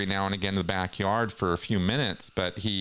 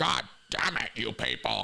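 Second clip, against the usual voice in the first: higher, put-on, screaming rant; 3 semitones higher than usual. Describing a lecture recording, imitating Hubbard screaming at people. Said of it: "he is screaming".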